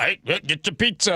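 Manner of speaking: put-on deep voice. Imitating a pizza seller at Costco: imitating a deep voice. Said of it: "Got this beer deep voice".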